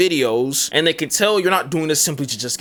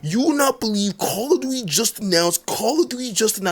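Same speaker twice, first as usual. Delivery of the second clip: grating, annoying, higher-pitched creator voice; 8 semitones higher than usual. Mocking copy-and-paste content creators, the speaker imitates their annoying creator tone. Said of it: "this annoying tone".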